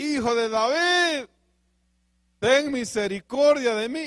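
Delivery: put-on shouting, crying out. A speaker retells how a woman cried out to the Lord, retelling a shouted plea. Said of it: "le gritaba a la mujer".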